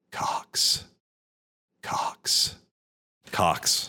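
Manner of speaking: ASMR-style delivery. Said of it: "it's almost A S M R".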